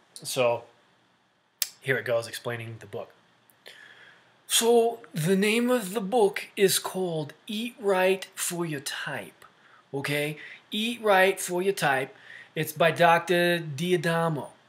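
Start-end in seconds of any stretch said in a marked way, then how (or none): 4.5-14.5 New York accent.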